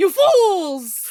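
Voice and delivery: very loud villain cry, "fools" drawn out. Joking that Cronus has become a cartoon villain: Cronus as a Disney villain. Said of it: "Cronus has officially become a Disney villain".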